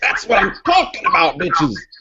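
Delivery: swooping, high, hyped-up pro wrestler promo voice. Telling the other person how they'll react, in a pro wrestler voice. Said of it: "You totally sound like a wrestler".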